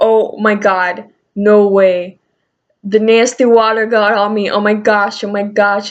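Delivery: put-on totally freaked-out, grossed-out outburst. Retelling how a woman reacted when a drop fell on her hand, imitating someone freaking out. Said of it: "she starts freaking out, and she's like".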